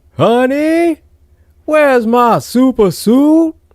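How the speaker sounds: very high, slow, comic falsetto yell. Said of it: "he would just yell out".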